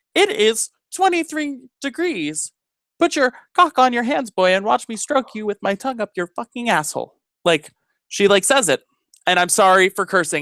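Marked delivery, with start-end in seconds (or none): 0.2-7.2 smooth voice-assistant tone, pitched up. Retelling how Siri answers a weather question in public, imitating Siri. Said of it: "And she'll be like".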